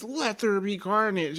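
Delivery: high, mock scream. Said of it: "and then he just screams".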